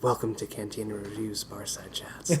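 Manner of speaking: fake, low, hushed, seductive close-mic voice. Opening a podcast as a joke: mock low seductive voice. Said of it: "talk, like, real low and, like, seductively".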